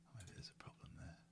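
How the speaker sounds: whispered speech. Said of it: "I'm quiet because I'm whispering".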